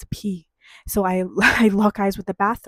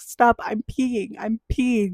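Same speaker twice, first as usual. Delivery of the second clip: mock laughing voice, higher; 3 semitones higher than usual. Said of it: "I start laughing so hard, I can't control it".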